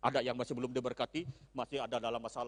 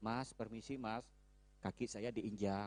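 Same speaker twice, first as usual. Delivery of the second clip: gentle, quieter and slower; 7 dB quieter than usual. Demonstrating how a person from Solo complains of a stepped-on foot, soft and gentle. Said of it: "ada orang yang lembut saja saudara, ... dari Solo, ... slow".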